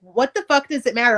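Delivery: ordinary delivery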